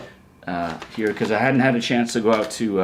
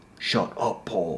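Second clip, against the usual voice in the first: soft, quiet, grumpy, cranky grumble; 4 semitones lower, 7 dB quieter than usual. Voicing a toy figure who insults the speaker: cranky Boba voice. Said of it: "You sound a little cranky".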